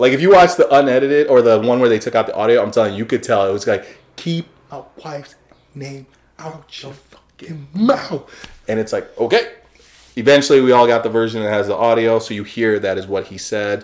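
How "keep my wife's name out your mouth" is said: slow, soft, deliberate delivery, every word drawn out. Quoting what a man said on the video, in a slow, deliberate delivery. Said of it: "and he said it slow".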